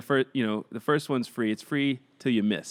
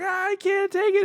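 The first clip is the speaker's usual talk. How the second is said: put-on sobbing, higher. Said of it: "she's just bawling".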